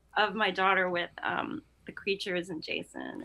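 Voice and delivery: plain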